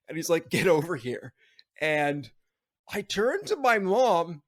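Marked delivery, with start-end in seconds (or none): 0.5-1.4 mock stern grandfather voice. Retelling a grandfather telling him to come over: imitating a stern grandfather. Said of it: "this very stern, very, like, authoritarian, tough old man".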